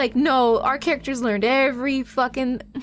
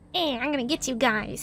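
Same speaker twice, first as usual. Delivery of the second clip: tiny, little gremlin creature voice; 5 dB quieter than usual. Voicing a mutated character in a group roleplay, little gremlin voice. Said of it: "Little gremlin voice".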